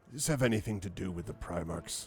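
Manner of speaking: voice dropped a bit. Retelling what a man asked after sitting close, in a lowered voice. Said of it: "he sort of lowers his voice a bit".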